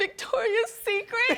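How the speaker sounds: tearful, sobbing, very high-pitched. Retelling a talk about modeling clients, acting out her past self speaking through tears.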